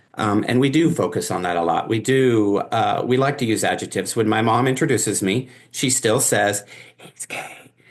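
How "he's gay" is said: hushed, breathy whisper under the breath. Retelling how mom introduces them to people: imitating mom whispering. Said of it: "And she whispers it".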